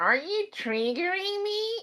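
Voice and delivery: very high, nasal, squeaky voice. Retelling how a man in a video answered a question, nasally high-pitched voice. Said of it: "his response were in this nasally, high-pitched voice".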